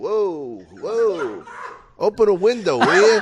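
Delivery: acted-out high, drawn-out mocking, wise-guy teasing. Retelling making fun of a teacher: imitating own past mockery. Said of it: "I was making fun of her farting".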